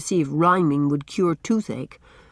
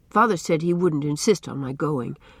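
ordinary delivery, nothing marked

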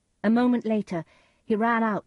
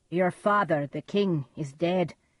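ordinary delivery, nothing marked

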